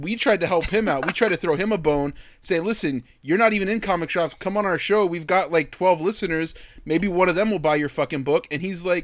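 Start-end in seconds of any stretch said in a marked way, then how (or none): none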